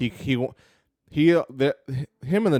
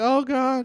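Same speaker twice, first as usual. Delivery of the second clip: frightened, very high-pitched squealing shriek; 13 semitones higher than usual. Voicing the populace as the orcs attack: shrieking in fear. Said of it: "kinda shriek".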